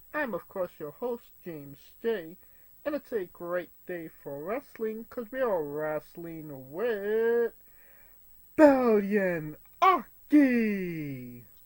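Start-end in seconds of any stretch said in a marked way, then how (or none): 2.9-11.4 dramatic delivery, louder and slower. Wrestling podcast host introducing the day's guest, in a dramatic delivery. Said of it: "saying it with a dramatic effect".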